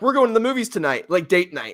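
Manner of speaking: excited, swooping sing-song voice. Imitating a friend announcing date night at the movies: imitating Zane sounding excited. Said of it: "all excited".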